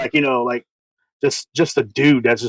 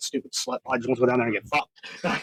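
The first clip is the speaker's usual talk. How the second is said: furious, seething, angry whispered rant; 9 dB quieter than usual. Retelling what grandpa said about the town changing: imitating someone angry. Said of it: "so mad".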